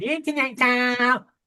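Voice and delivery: whiny, pestering, high-pitched nagging complaint. Speaker mimics how a woman sounds nagging at him, imitating a nagging woman. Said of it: "when they're nagging at you, going".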